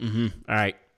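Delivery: ordinary delivery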